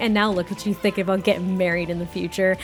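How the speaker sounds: normal talking voice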